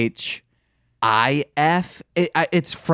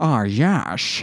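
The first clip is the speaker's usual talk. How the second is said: suave, smooth British spy voice. Asked to do it again, performing as James Bond. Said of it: "That's that's me being James Bond".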